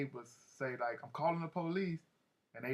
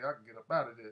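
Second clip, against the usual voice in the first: ordinary talk, nothing marked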